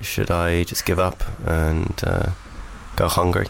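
low, flat, bored drone like a weary worker.

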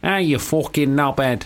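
Mancunian-sounding voice. Speaker shows what they'd say to get into a Manchester accent, Manchester accent. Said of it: "For Manchester, I would have to go".

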